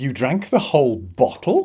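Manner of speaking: pitch rises on bottle, like a question. Turning a statement into a yes-no question with the voice, rising question tune at bottle. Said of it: "using the voice to make it sound like a question".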